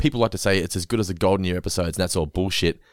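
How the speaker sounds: ordinary delivery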